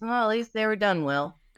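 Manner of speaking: crestfallen, heavily disappointed, grandmotherly voice. Quoting what a grandma always said, imitating grandma's disappointed voice. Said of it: "in a very disappointing voice".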